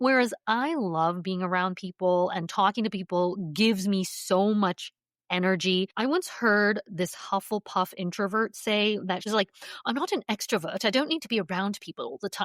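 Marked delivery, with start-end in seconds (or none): 9.8-12.5 fast, laid-on fake British accent. Quoting an introvert she once heard, in a put-on British accent. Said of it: "I don't know why I put on a British accent".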